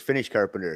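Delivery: plain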